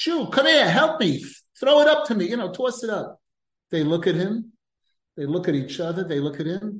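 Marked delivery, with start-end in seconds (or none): 0.0-3.2 put-on high-pitched yelling. Retelling a story, a peasant yells down to two rabbis: peasant yelling for help. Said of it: "he yells out to them".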